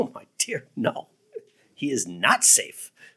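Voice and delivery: slow speech with chuckling running through the words. Retelling a story, the speaker quotes a beaver answering a frightened girl, retelling a chuckling reply. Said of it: "And he kind of chuckles".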